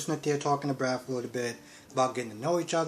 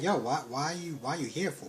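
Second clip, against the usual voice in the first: furious, indignant, livid angry voice; 4 dB quieter than usual. Retelling a soap scene where Michael confronts someone: imitating a livid man. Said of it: "He's livid".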